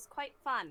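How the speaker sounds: dry, heavy, extreme sarcasm. Recapping a climb up an ice cliff from the session: sarcastic. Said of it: "I say in the most sarcastic way possible".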